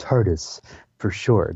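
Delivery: mock smugness, pleased-with-himself delivery. Retelling a character's line with a bit of smugness: imitating a smug delivery. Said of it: "a bit of smugness that comes off him when he goes".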